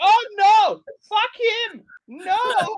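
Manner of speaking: terrible fake German accent, very high and loud. Imagining a listener reacting to the show, the speaker uses the worst German accent. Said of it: "it's like the worst German accent".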